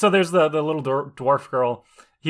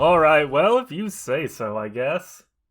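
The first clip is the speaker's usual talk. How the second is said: very slow, very drawn-out, derisive mocking dwarf voice. Answering in character after a dwarf's greeting: mocking voice. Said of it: "you just started mocking that dwarf".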